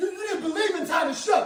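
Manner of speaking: wild, high, loud whooping celebration.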